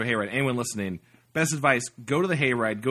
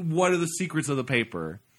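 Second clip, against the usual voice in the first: usual speaking voice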